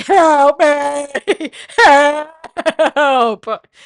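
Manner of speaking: very loud, high screaming with "me" drawn out. Retelling being dragged down stairs by friends: retelling own screaming. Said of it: "I'm just screaming, like".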